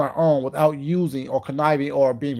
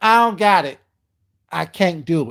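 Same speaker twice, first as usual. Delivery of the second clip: mock full-on loud, drawn-out tone of attitude; 3 semitones higher, 5 dB louder than usual. Repeating Leandra's line, imitating her tone of attitude. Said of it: "in that tone of attitude too".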